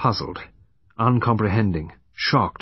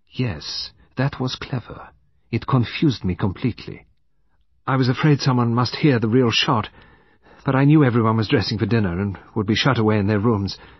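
ordinary delivery, nothing marked

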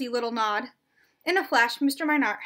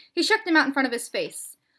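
ordinary delivery

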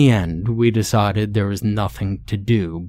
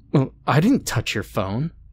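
slightly scared, faintly frightened, uneasy tone; 4 semitones higher than usual. Questioned next about the missing phone, a girl answers with a note of fear. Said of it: "she said with a note of fear in her voice".

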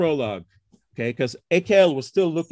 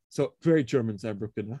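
normal talking voice

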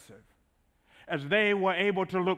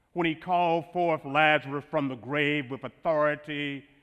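ordinary talk

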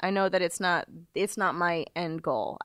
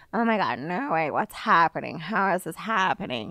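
exaggerated, hyperbolic put-on Valley Girl voice. Describing an audition, acting out the part: put-on Valley Girl voice. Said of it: "now this girl's a Valley Girl".

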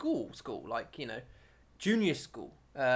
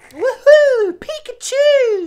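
put-on gleeful childlike cheering, very high and louder; 21 dB louder than usual. Retelling own words as a school kid with cards: imitating own childhood excitement. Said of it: "I never spoke like that".

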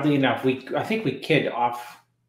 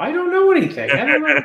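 very high, squealing, raised voice; 14 semitones higher, 6 dB louder than usual. Teasing another speaker by imitating his words: imitating Dave saying he knows nothing. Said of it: "you sound like Bob Gruska now".

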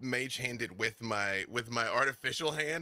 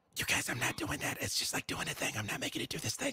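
whispered voice; 2 semitones higher than usual. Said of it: "I'm still whispering in our psychic connection".

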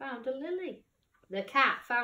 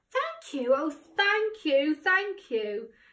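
high, grateful, thankful crying out; 5 semitones higher, 4 dB louder than usual. The witch speaks to the bird, frog, cat and dog, crying out gratefully. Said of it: "the grateful witch cried".

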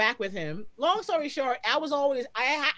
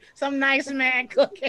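mocking old lady voice, louder; 5 dB louder than usual. Repeating the other speaker's words back: imitating an old lady voice. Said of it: "you sound like an old lady".

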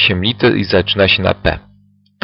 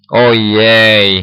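groaning. A character answers another's demand about dogs, groaning. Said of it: "jęknął".

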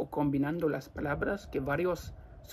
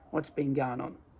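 Australian accent with words blended into one. Showing how an australian would say a phrase: australian accent, words run together. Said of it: "más dicho como un australiano sería".

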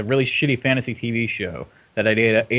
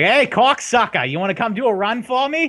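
terrible fake Boston accent, very high-pitched; 12 semitones higher, 4 dB louder than usual. Mocking the voice acting in Shadowrun Chronicles with a horrendous Boston accent. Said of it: "Everyone has horrendous Boston accents".

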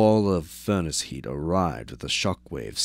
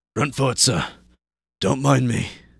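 raised, pitched-up slur, words running together, half out; 7 semitones higher, 6 dB louder than usual. Halfway to unconsciousness, a man speaks to the one he calls sir, slurred. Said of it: "Jürgen slurred".

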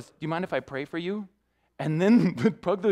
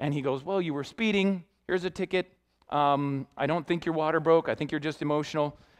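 usual speaking voice

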